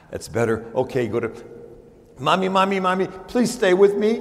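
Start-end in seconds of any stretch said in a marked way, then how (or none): 2.2-4.3 mock-scared pleading child voice, much higher, slower. Telling a story, a little boy begs his mommy at bedtime, imitating a scared child pleading. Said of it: "he's really scared".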